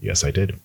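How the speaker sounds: play-acted beaten, defeated, resigned tone. Retelling the prime minister's answer at PMQs: imitating a defeated voice. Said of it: "in a very defeated voice".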